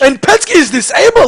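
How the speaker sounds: excited, high, loud play-by-play announcer delivery.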